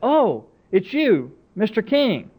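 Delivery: caught-off-guard surprise. Retelling a store visit, the speaker quotes the checkout lady, imitating a startled voice. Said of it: "in a startled sort of voice".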